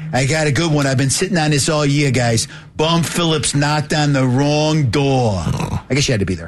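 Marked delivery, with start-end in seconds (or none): 0.1-5.4 put-on speaking with Brooklyn accent. Retelling a joke Sam Bertigliano made about the Browns, in Sam Bertigliano's Brooklyn accent. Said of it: "in his Brooklyn accent".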